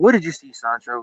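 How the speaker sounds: parent-like coaxing voice. Retelling what the driver asked him, mimicking a parent talking to a kid. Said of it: "when a parent talks to a kid".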